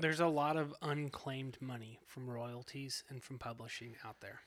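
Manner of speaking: very quiet, hushed, secretive half-whisper. Speaking in a conversation, afraid certain people will overhear, half-whispering. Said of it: "Why are you whispering?".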